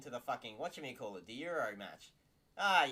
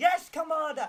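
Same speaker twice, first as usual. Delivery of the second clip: loud talking, higher and louder; 10 dB louder than usual. Retelling soldiers answering a commander they didn't like: imitating loud talking. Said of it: "they'd talk really loudly and be like".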